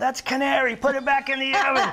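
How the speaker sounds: put-on loud hollered voice in a Chicago accent. Retelling how the old pizzeria owner yelled at the oven, [name]'s Chicago accent yell. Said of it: "That's my Chicago accent".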